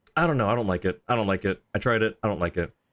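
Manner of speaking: normal talking voice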